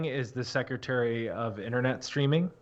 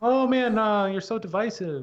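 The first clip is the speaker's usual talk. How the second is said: drawn-out, slow, pitched-up scolding aunt voice; 9 semitones higher, 3 dB louder than usual. Retelling how aunts and uncles reply online: imitating aunts and uncles. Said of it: "That was a good aunt and uncle impression".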